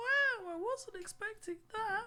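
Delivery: very high squealing meme-style voice. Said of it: "the meme".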